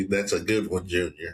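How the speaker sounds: plain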